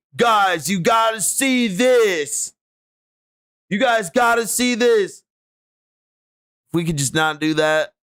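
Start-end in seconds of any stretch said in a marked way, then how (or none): 0.2-5.2 mocking hyped clickbait voice, pitched up. Complaining about clickbait videos, mocking hyped clickbait voice. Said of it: "enough with this hype shit".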